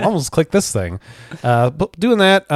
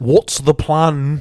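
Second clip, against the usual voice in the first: bad, unconvincing attempt at a British accent. Quoting what he always wants to say, in a bad British accent. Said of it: "I can't do like a very good British accent".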